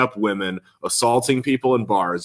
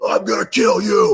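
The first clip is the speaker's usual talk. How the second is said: very high, slow-stretched, drawn-out scream; 10 semitones higher, 3 dB louder than usual. Retelling a man threatening with a baseball bat: imitating someone screaming. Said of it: "screaming at him with a baseball bat".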